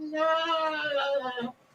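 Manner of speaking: very high, overdramatic wailing cry.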